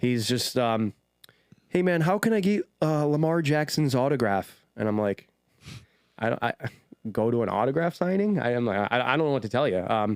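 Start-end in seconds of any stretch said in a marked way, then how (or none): 1.7-4.5 put-on heavy, broad, thick Canadian accent. Imitating a guy they didn't recognize, in a thick Canadian accent. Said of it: "he has a really thick Canadian accent".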